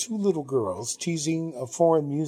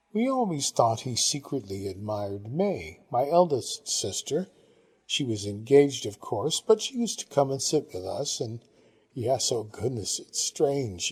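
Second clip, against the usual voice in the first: plain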